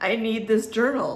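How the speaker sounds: ordinary talk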